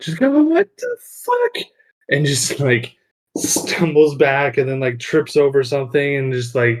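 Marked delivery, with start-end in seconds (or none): 0.4-1.6 put-on startled kid's shriek, very high. Narrating a man woken in a wagon who sees you, screaming like a child. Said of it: "screams like a eight-year-old child".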